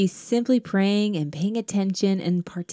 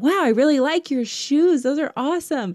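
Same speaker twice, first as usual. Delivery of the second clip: happy, bright, upbeat, pitched-up; 6 semitones higher than usual. Retelling how a man demonstrated changing his tone, retelling a more happy tone. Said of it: "when I change my tone and it's more happy".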